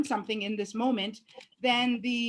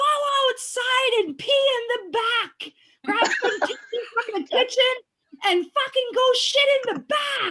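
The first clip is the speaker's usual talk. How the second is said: loud, very high, acted-out screaming; 13 semitones higher, 5 dB louder than usual. Speaker re-enacts yelling at someone banging on the door, retelling a scream. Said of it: "I'm so sorry for screaming".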